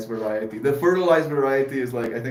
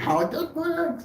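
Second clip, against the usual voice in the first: troll voice, much higher pitch. Repeating a line after being told it sounds off, in a bridge troll voice. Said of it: "You sound like a bridge troll".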